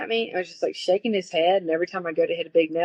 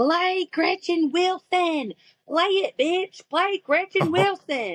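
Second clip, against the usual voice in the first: mock shrieking, very high, slow and drawn out; 12 semitones higher than usual. Recalling a heckler at a packed gig, imitating a woman screaming. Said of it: "she was screaming".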